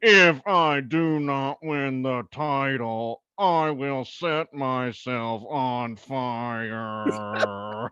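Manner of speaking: flat, mechanical, droning robot monotone. Offering one more impression from your repertoire, do the robot Kane voice. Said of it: "robot Kane voice".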